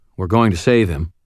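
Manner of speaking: plain reading voice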